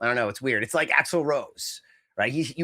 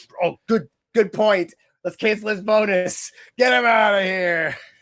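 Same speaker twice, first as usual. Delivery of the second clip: very slow, loud, every word drawn out; 7 semitones higher, 5 dB louder than usual. Retelling a scene from the movie Scrooged: Bill Murray in Scrooged. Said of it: "what's that Bill Murray movie, Scrooged?".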